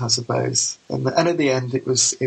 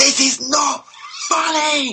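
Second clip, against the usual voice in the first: play-acted very high, shrill, grumpy shout at full voice; 14 semitones higher than usual. Retelling how he stood up in his chair, retelling a shout. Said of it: "The top of his voice".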